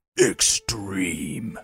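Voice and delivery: dramatic, deep movie-trailer announcer voice. Producer suggests how the show's title should be announced: movie trailer guy voice. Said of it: "say that like a movie trailer guy".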